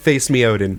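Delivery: ordinary delivery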